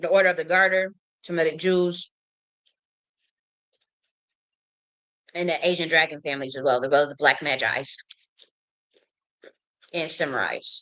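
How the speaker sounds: talking with mouth full, chewing while speaking. Listing groups to listeners while hungry, talking while chewing food. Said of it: "forgive me for all the chewing".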